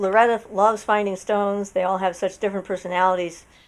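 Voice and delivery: ordinary delivery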